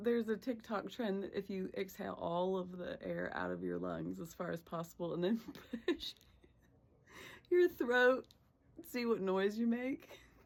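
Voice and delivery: laughing hard while talking. Explaining a TikTok trend, laughing hard while talking. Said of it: "I'm laughing so hard right now".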